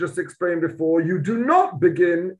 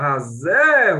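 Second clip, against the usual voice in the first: strong stress on the word hazeh; 2 semitones lower than usual. Speaker reads the Hebrew phrase aloud, stressing the word hazeh. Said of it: "Stress the word hazeh".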